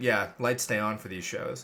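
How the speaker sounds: low, expressionless, matter-of-fact deadpan. Retelling what a movie theater worker said about the lights: imitating a deadpan reply. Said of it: "he looked at me deadpan and was like".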